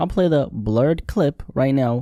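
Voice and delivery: "blurred" stressed, slow and deliberate. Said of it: "emphasis on blurred".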